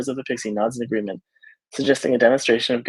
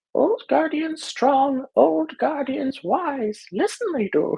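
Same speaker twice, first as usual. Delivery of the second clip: very high, tiny, tinkling pixie voice. Narrator reading a pixie's answer to Ophelia, tinkling pixie voice with a Yoda vibe. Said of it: "In a voice like the tinkling of tiny bells".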